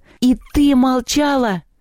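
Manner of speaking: high-pitched, roared angry yell. Reading Anton as he confronts Lelya in the story, yelling. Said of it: "заорал он".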